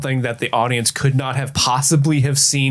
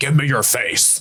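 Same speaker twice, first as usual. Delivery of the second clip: fake robot character voice. Acting out an Optimus Prime line from a Transformers movie: Optimus Prime voice. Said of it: "Optimus Prime from one of the Transformers movies".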